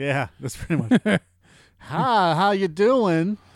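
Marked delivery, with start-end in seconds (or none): 1.8-3.4 slow, high-pitched Southern gentleman character drawl. Improvising a scene, the speaker goes into a southern gentleman voice. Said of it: "going into a Southern Gentleman".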